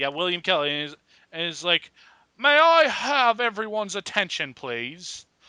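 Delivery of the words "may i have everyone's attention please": bad, clumsy British accent, slow and drawn out. Act out William Kelly picking up the microphone to address everyone, in a bad British accent. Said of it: "That is the worst British accent".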